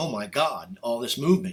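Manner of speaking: ordinary delivery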